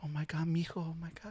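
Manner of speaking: put-on very soft, high, hushed, weepy tearful sobbing. Retelling his mom's reaction to news on the radio, imitating her bawling. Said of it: "she started bawling or whatever".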